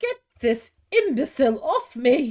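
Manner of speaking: put-on loud, irate cow voice with British accent. Voicing a cow that a player speaks with: angry British cow voice. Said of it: "British cows?".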